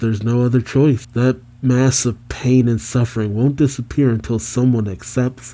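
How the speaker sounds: ordinary delivery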